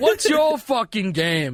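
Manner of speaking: loud, drawn-out, high voice. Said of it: "and he goes like".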